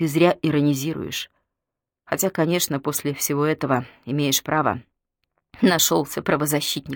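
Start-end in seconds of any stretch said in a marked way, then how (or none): none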